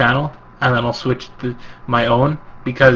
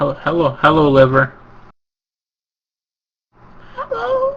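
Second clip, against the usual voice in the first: horrible, clumsy, swooping, sing-song, overdone put-on voice; 4 semitones higher than usual. Greeting someone on the podcast: horrible impression of Liver. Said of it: "that was a horrible impression".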